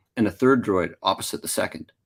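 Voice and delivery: ordinary delivery, nothing marked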